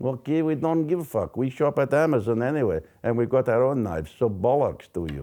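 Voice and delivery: bad, terrible put-on Russian accent. Acting out an imagined phone call with Trump: bad Russian accent as Putin. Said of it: "That was the worst Russian accent".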